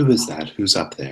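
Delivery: small voice calling from below. Game master voicing a voice from down in a well, small quiet voice. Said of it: "Small, quiet, but definitely there".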